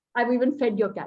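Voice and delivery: ordinary talk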